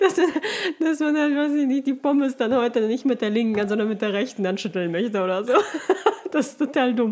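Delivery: words breaking up with giggles, laughing while talking. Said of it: "Sorry, wenn ich jetzt anfange zu lachen".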